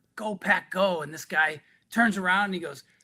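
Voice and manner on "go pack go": confiding stage half-whisper. Retelling a greeting to a stranger in a sports jersey at a bar: quiet half-whisper. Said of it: "I quietly whisper".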